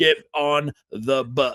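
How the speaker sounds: very slow, drawn-out, mild yell. Retelling a movie scene where the bus driver yells at kids: imitating someone screaming. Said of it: "screaming at all the kids".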